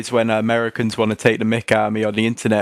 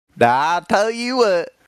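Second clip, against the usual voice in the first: very high, put-on Southern American accent; 9 semitones higher than usual. An English speaker chatting with a friend tries a Southern 'I tell you what' accent. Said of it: "You got a pretty good "I tell you what" accent".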